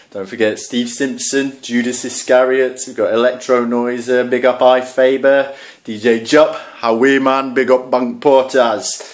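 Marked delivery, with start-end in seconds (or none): 7.6-9.0 terrible put-on Geordie accent. Giving shout-outs to viewers, in a terrible Geordie accent. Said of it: "That was a terrible Geordie accent".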